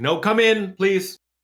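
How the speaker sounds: shrill, high, loud, drawn-out shout. Voicing a voice from the second floor that calls the visitors in: shouting from upstairs. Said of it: "the voice from the second floor or second story just sort of shouts".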